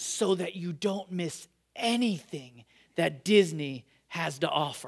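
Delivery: low, hushed, dead serious, almost shaking voice. Retelling how her sister urged the speaker to come along, mock dead-serious shaky voice. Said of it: "dead serious with like almost a shake in her voice".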